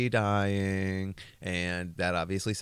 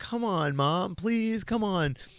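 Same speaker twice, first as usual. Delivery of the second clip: very high-pitched begging, pleading voice; 12 semitones higher than usual. Retelling a frightening dream, imitating Howard Stern pleading. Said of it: "Howard's voice being my voice".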